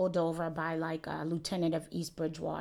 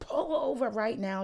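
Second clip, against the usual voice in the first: mock, over-the-top, high, overdramatic cop yell; 6 semitones higher, 3 dB louder than usual. Retelling a cop pulling the speaker over, imitating the cop yelling. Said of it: "Just started yelling, being mad dramatic".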